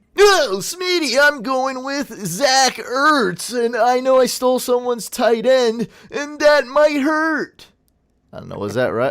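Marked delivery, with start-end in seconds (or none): 0.2-7.7 very high, loud, wacky, fun radio DJ voice. Announcing a fantasy football draft pick, wacky morning radio host voice. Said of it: "that was a whack radio... the wacky morning show, fun radio host voice".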